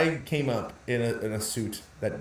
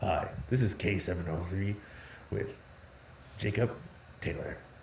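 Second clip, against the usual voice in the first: hushed, breathy late-night radio host delivery; 4 semitones lower, 7 dB quieter than usual. Showing the other speaker another voice they can do: late-night radio host voice. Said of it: "late night radio host".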